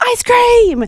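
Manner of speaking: acted-out, sudden, very high-pitched shout. Retelling a surprise call to the kids at bedtime: imitating a yell. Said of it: "Josh and I would just yell".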